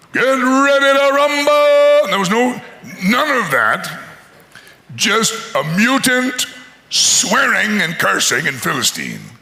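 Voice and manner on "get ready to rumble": slow, drawn-out, hyped-up ring announcer voice. Joking about a fight with no announcer: imitating a ring announcer. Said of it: "no guy in the middle going".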